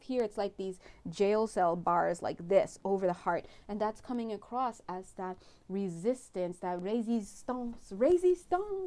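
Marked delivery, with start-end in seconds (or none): 6.6-8.9 really bad put-on French accent, very high, shrill and loud. Giving a reading for Scorpios, saying the word in a really bad French accent. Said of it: "in that really bad French accent".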